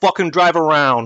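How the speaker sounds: menacing, intimidating tone. In a game, the speaker's character tries to intimidate a man, intimidating. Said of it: "try to intimidate him".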